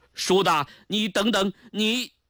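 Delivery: high, loud calling out. A man chases someone who is leaving to the door, calling out. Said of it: "高拱追到门口喊道".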